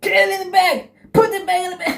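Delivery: frantic, shrill, very high screeching. Retelling a cab driver's outburst: imitating someone screaming. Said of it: "she started to scream at me".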